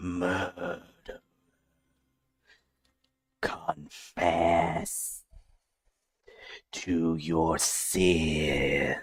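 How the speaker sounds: very hushed, warped, distorted monster voice. Describing the voice Layla hears in her ear: distorted, monstrous voice. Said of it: "it is in a distorted, monstrous tone".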